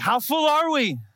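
very high, winded, breathless yell. Retelling yelling to the wife after pumping water: imitating an out-of-breath yell. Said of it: "Out of breath, I finally yelled at her".

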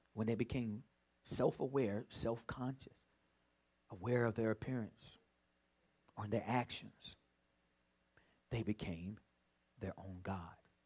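drawn-out, hushed, very slow, very low and quiet. Repeating a point again for the audience, speaking real slow. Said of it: "I'm going to say it again real slow".

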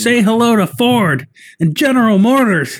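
mock shout in a movie soldier style.

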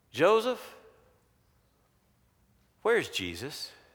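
mock-accusing, accusatory tone. Retelling the trip home as Joseph, quote the woman's question, mimicking an accusatory tone. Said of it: "it's that accusatory tone a woman can use".

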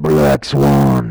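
loud, booming voice with dramatic gravitas. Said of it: "You got to say it with like a gravitas. ... I just blew out Zach's eardrums".

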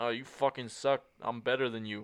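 put-on trash-talking voice. Describing how other players taunt people, imitating trash talk. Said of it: "other players who are just like".

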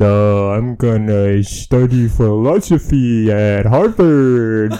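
extremely slow, drawn-out speech. Retelling a campfire scene where Stu is asked his plans, very slow Stu voice. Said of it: "he talks so slow".

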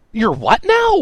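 very high, very loud, shrill accusing tone. A character questions a companion a second time, accusingly. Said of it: "this time accusingly".

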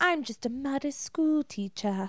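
put-on high British accent. Imitating the school teacher character Winona: imitating Winona's British accent. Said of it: "that's about her British accent".

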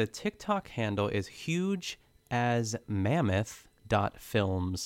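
very slow, deliberate, drawn out word by word. Speaker gives a tiktok handle so everyone can write it down; very slow. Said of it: "I say that very slowly".

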